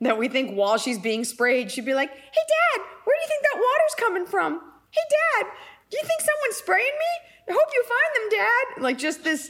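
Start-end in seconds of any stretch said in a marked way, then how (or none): 2.1-8.8 sweet, very high, innocent little voice. Speaker imagines what she'd say while being sprayed, in a put-on innocent voice. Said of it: "we do this voice because she's so innocent".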